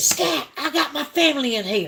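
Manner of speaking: startled, frightened yell, pitched high. Retelling a just-woken father yelling at a man reaching in: imitating a loud scared shout. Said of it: "he used a tone that only a man would use if he was upset or scared".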